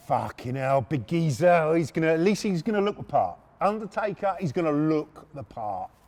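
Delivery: ordinary delivery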